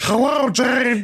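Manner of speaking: very high, put-on fish-creature voice. Voicing a character on the comms, speaker tries a put-on fish voice. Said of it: "Let's see if I can do this voice".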